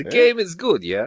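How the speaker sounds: put-on Russian accent. Answering a request for a Russian accent: put-on Russian accent. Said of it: "where's your Russian accent?".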